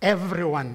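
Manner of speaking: stress on the word everyone. Quoting the Constitution in a speech: stress on EVERYONE. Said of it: "I want to stress that word again".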